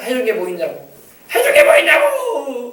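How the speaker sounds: high, loud, resentful outburst.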